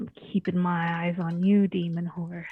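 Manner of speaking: stage whisper, loud. Whispering toward a horse so everyone can hear: stage whisper. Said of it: "a stage whisper".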